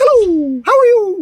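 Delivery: very high, slow head voice, resonating off the mouth's roof. Showing the greeting voice placed up high: high greeting voice in the head. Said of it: "hitting the roof of my mouth".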